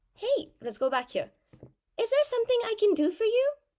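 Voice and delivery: very high, squeaky cartoon-mouse voice. Demonstrating how a performer changes pitch on a line, saying it a bit higher. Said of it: "You might have said it a bit higher".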